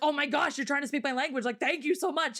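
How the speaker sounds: put-on overjoyed gushing, fast and excited. Retelling how locals react when you try their language: imitating excited locals. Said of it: "everyone just gets, like, so excited".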